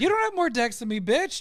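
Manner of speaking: very high-pitched, put-on hostile, fake-aggressive delivery. Answering a teasing claim about having more decks: mock aggressive. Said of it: "I'm getting very aggressive with these swearing at you".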